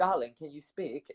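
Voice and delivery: poor put-on British accent. Speaker quoting a woman's Facebook message to him, in a bad British accent. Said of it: "in her British accent".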